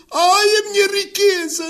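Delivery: mock shouting, high, loud, slow drawn-out cries. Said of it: "a gritar assim".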